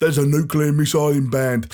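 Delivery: put-on gruff soldier voice. Acting out a leaked game voice line in a Captain Price voice. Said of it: "my leaked Captain Price voice".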